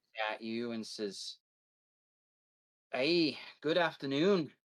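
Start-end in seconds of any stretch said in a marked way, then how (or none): 2.9-4.5 put-on rough, gruff dwarf voice with half-Irish accent. A storyteller voices a dwarf who rides up and greets the players, gruff quasi-irish dwarf voice. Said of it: "in this gruff, quasi-Irish voice".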